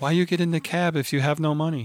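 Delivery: really soft, hushed, soft-spoken voice. Retelling what a cab driver said to his passenger, imitating a really soft voice. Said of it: "that really soft voice".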